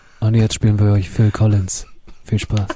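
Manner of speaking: airy, breathy radio-announcer voice. Doing a radio-style announcement of what is played, in a breathy radio-host voice. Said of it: "Ich habe diesen Radiohaucher jetzt drauf".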